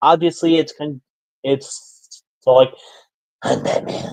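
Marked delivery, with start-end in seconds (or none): 3.4-4.1 deep, whispered hero voice, dropping low.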